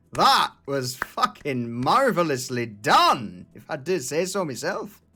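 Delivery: sounding a little happy. Voicing a character calling out from behind in a corridor: sounding a little happy. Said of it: "You sound a little bit happy about that".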